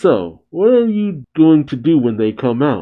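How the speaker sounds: ordinary delivery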